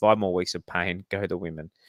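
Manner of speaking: ordinary talk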